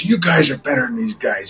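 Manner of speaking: gruff, coach-like delivery. Retelling how the coach got up to motivate the players, in a gruff Fred Whittingham voice. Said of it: "in his gruff voice".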